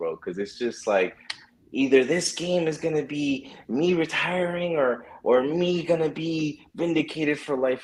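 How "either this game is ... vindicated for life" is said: high, derisive, sneering, mocking put-on voice. Reading someone's tweet aloud: mocking Emmanuel Acho voice. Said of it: "I read them in, like, a hoe voice".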